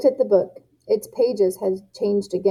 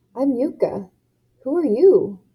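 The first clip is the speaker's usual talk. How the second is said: cracking whisper, higher pitch; 4 semitones higher than usual. Narrator reads Yuka greeting a small dragon, in a whisper with cracking voice. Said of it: "I whispered. My voice cracked".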